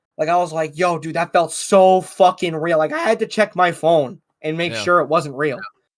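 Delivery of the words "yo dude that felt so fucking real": plain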